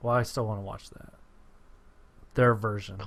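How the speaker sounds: sounding sad. Answering that the other's film version is better anyway: sounding sad. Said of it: "Why did you say it, like, sad?".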